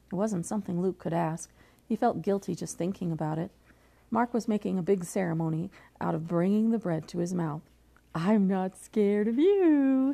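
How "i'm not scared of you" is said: loud, very slow taunt, "you" drawn out. [name], about to bite the bread, speaks to Luke, taunting. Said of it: "he taunted".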